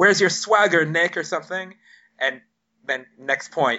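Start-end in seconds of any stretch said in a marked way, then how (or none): 0.0-1.2 loud, high, heckling-style shout. Retelling a heckle from a spectator during a match: imitating a fan shouting. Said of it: "someone late in the fourth set shouted".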